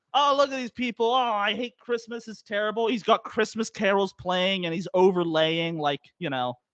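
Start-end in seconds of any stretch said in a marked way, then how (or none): 0.1-2.8 ranting yell, pitched high. Retelling how the driver yelled at people in traffic: imitating a driver yelling. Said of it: "he's just yelling".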